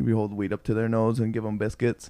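plain

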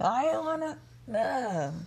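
put-on high-pitched old fun-police killjoy voice. Trying to find a better voice, answering in a fun police voice. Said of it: "That's my fun police voice".

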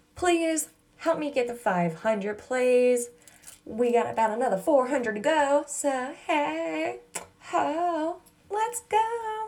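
the word ho pitched high and stretched long. Host being deliberately weird with listeners, The Nanny voice. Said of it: "Pretty sure I sound like the nanny".

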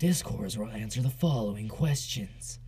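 epic, dramatic movie-trailer narrator voice-over. Describing an old intro video's narration, quoting it in a movie trailer voice. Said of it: "it was like a fucking trailer voice".

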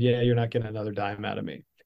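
ordinary talk, nothing marked

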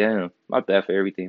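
usual speaking voice

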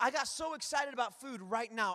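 ordinary delivery

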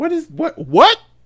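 startled, booming, very high, drawn-out what. Retelling hearing someone in the back as they left: imitating a loud "what". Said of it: "that loud, "What?"".

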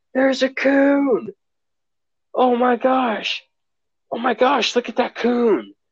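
shrill, very high, stretched-out yelling, coon drawn long. Retelling a parent's excited reaction to a raccoon: imitating mom yelling. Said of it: "she goes yelling".

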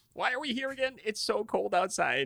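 complaining, whining tone.

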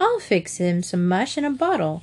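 ordinary talk

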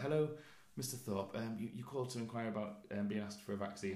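mock nervous-sounding voice. Retelling a call from the doctor's office: imitating a nervous-sounding caller. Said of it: "a very nervous sounding guy".

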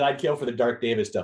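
ordinary talk

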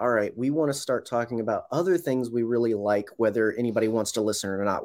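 ordinary delivery

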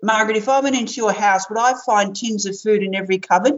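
normal talking voice

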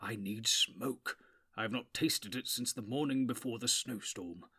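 muttered, mumbling voice. The old wizard sits down by the door to keep watch, muttering. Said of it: "he muttered as he sat down by the door".

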